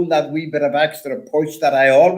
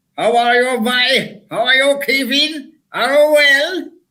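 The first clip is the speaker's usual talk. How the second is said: put-on Cork accent, very high and slow; 9 semitones higher than usual. Showing a very good Cork accent. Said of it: "I do a very, very good Cork accent".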